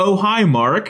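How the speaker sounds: super fake, movie-line style delivery. Quoting a famous line from The Room: imitating The Room's fake line delivery. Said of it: "it's super fake".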